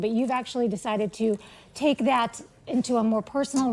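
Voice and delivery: normal talking voice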